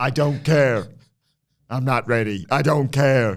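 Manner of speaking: same intonation repeated exactly on each line. Retelling what Von Wagner said about three times, as a Von Wagner impression in the exact same intonation. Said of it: "in the exact same intonation".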